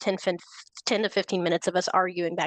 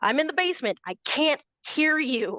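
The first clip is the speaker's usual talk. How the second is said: mock exasperated, frustrated delivery with pitched-up voice; 7 semitones higher than usual. Retelling calling up to mom from the basement: imitating own frustrated reply. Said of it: "starting to get a little bit more frustrated".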